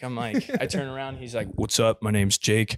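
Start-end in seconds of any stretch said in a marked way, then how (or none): 1.5-2.8 super deep dude voice from the bass end. Retelling how a guy in the back seat introduced himself, imitating Jake's deep voice. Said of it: "But it was super deep".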